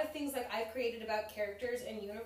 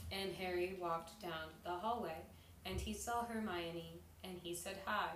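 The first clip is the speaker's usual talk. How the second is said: put-on low, flat, lifeless, deadpan monotone narration; 5 semitones lower, 8 dB quieter than usual. Recalling a boring audiobook, imitating the narrator in a deadpan monotone. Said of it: "the person was deadpan, they like literally had the same tongue".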